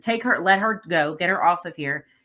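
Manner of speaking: ordinary delivery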